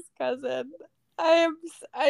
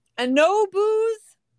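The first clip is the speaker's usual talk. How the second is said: mock yell, raised and pitched up; 6 semitones higher, 5 dB louder than usual. Retelling how a man down the bar yelled about a club soda order: retelling a yell. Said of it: "And he yells".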